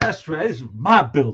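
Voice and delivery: mock fired-up, mad, defiant tone. Retelling what he said to tenants back then: imitating his own angry self. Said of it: "I was so mad".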